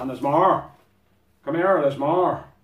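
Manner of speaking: very loud, high, crappy fake Irish accent. Speaker unpacking a kit and finding more inside, in a crappy Irish accent. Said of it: "the most crappiest Irish accent".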